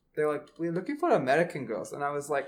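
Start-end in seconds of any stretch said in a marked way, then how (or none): none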